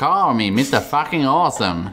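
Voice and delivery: put-on American accent. Showing off an accent, the speaker tries a line in a put-on American accent. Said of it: "My American accent's better than yours".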